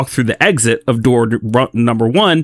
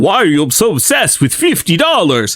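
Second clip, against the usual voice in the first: vampire voice, high and swooping; 6 semitones higher than usual. Recounting how you finally reached the NPC at the end, speak his line in your best Dracula voice. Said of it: "in his best Dracula voice".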